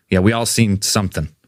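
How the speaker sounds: ordinary talk, nothing marked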